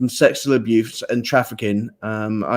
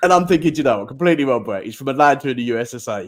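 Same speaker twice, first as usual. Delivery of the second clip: ordinary talk, nothing marked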